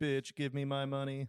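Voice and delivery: put-on robotic pimp character voice. Acting out a robot pimp demanding money: put-on robot pimp voice. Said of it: "there's gonna be robot pimps".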